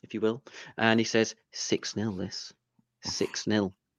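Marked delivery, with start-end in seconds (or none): 1.5-3.7 slow, hushed, confiding whisper, very close. Retelling what Kev whispered at the match: imitating Kev whispering. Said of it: "whispers into my, you know, smooth ear".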